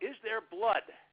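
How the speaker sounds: loud, high-pitched yelling.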